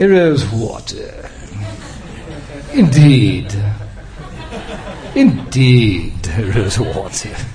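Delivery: slow, drawn-out posh British accent.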